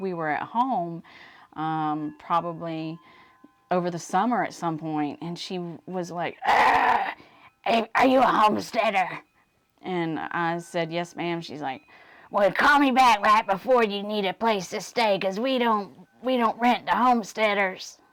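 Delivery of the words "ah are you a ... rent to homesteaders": imitated raspy smoker voice. Retelling what a woman said about reservations, speaker imitates her in a smoker's voice. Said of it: "That was my smoking voice".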